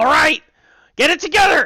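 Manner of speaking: very loud, very high, rough, gruff goblin voice. Voicing a goblin to the players during a fight: gruff goblin voice. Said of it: "a little bit more of a gruff goblin voice".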